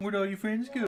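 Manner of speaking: making fun, taunting tone. Joining in making fun of an enemy standing alone: mocking taunt. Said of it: "I make fun of him".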